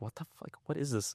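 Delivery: quiet, very soft, baffled, bewildered American voice. Speaker retells how American followers react to the Instagram account, imitating confused American friends. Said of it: "They're like".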